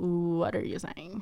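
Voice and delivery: play-acted sassy voice, slow and full of attitude. Retelling how he replies to a trend saying: imitating someone with attitude. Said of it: "with that attitude".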